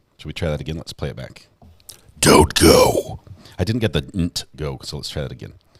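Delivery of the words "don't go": creepy possessed voice, high, very slow, drawn out. Retrying a recorded take, doing a Billy impression in a possessed voice. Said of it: "you sound possessed".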